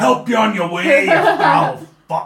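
very high, shrill, loud character voice. Voicing Kilgar on his turn in combat: voicing Kilgar. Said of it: "he just breathes on it".

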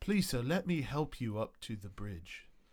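condescending, patronizing, overly courteous talking-down politeness. Voicing a helper who kneels down to a fallen player: patronizing, condescending NPC voice. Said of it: "this condescending asshole is the thought in your head".

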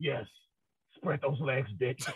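very deep, soft, hushed masked-vigilante hero voice. Demonstrating the role-play idea to listeners, talking in a Batman voice. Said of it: "start talking in your Batman voice".

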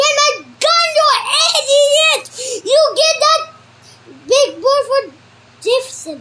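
high-pitched yelled shout. Reading a story, the Dick calls to the gunner; shouting. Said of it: "The Dick was shouting to the gunner".

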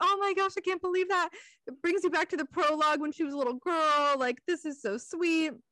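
put-on bawling. Speaker retells reacting to a book passage, imitating own bawling. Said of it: "i am just bawling my eyes out like".

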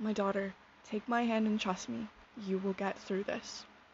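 ordinary talk

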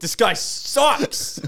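acted-out, very high, impassioned, passionate outburst. Teasing the other speaker by imitating him: imitating a passionate outburst. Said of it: "You sounded so passionate".

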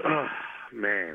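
low, quiet voice full of disgust. Asked about drafting Mac Jones as quarterback, the speaker reacts, disgusted. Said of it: "I hear that in my voice, that disgust".

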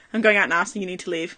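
completely serious, deadpan delivery. Retelling what he said after hanging up the phone: imitating a dead serious tone. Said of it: "dead serious".

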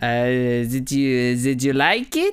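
put-on French accent in English. Acting out an awkward workplace scene as a professor: french accent. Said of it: "I'm going to be a French professor".

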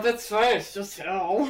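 muttered under the breath. A man reacts to being sent on a dangerous mission, under his breath. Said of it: "Cole under his breath".

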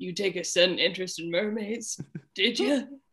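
chilling, eerie character voice. Quoting a movie character in his secret mer lair: Jess impression. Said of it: "that was a very good impression".

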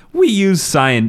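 cracked, breaking voice, cracking high. Reading a quote aloud from a published article: voice cracking. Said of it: "I don't know why my voice kinda cracked there".

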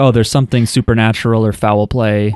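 normal talking voice

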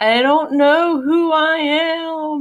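acted sobbing, very high and slow, "am" stretched. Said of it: "just crying and saying".

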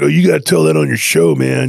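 rough and creaky character voice. Retelling what a friend said about the story: imitating a friend who talks like Otto. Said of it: "he talks kinda like Otto".

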